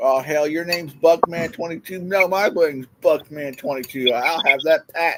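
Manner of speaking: acted ranting and raving. Imagining a friend ranting and cussing at himself: imitating someone ranting and raving. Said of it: "He's just ranting, raving".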